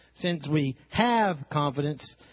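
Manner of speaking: stress on have, drawn out slowly with weight.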